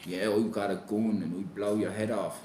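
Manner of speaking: put-on Dublin Irish accent. Mocking tough lyrics in a put-on Dublin accent. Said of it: "I know it was in Dublin accent".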